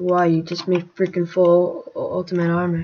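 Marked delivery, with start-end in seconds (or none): none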